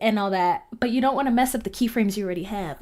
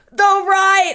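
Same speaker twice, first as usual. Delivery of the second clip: very loud, high-pitched, blurted shout; 10 semitones higher, 9 dB louder than usual. Someone explaining keyframing answers their own question about direction; yelling. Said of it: "I don't know why I'm yelling".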